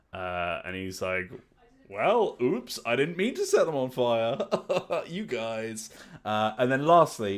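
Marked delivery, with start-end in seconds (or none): 1.9-5.9 put-on old wizard character voice. Describing an imagined party, voicing the wizard: Steve Buscemi as old wizard. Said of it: "a wizard character who's played by Steve Buscemi".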